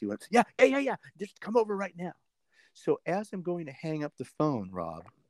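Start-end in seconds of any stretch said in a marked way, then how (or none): 0.3-2.1 mock eager, fast, high, excited rattled-off shouting. Retelling an excited phone call from Keith: imitating Keith shouting. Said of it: "I hear him still shouting".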